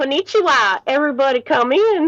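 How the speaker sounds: booming, very loud put-on Southern American accent. Telling a story, the narrator voices a teacher's line: put-on southern accent. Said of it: "Konnichiwa in a southern accent".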